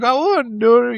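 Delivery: very high, giggly, laughing through the words. Retelling how someone answered a question: imitating someone laughing while talking. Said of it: "he's just laughing like".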